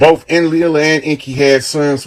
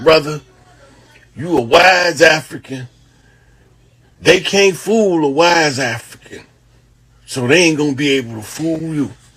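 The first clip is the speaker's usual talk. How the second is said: rough, rasping, very raspy delivery; 2 semitones higher than usual. Retelling what Brother Hardill told him when asked, in a raspy Brother Hardill voice. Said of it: "He had a real raspy voice".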